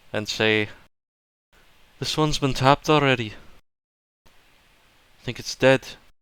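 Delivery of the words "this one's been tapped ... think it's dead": calling back in a low voice. A player's character calls back to companions after hearing the bollywogs, a hushed call. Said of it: "yell back at my companions in the lowest voice".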